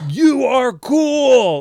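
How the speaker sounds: put-on threatening shout. Re-enacting jumping out of the car to shout at a priest friend, retelling a threatening shout. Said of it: "I just like shouted this to the whole neighborhood".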